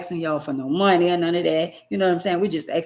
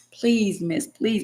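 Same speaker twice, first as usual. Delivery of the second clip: put-on pleading, begging tone; 2 semitones higher than usual. Retelling how they begged a store clerk to take food back: imitating begging. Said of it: "literally begged".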